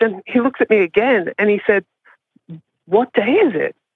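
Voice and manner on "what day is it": alarmed, disoriented, panicked, urgent voice. Retelling what he said after scrolling his phone: imitating a panicked question. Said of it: "looking really panicked".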